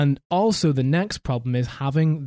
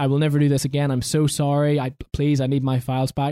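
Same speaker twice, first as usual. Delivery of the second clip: put-on regretful, remorseful pleading. Retelling a scammer begging for his files back: imitating regretful pleading. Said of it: "you just heard the regret in the guy's voice".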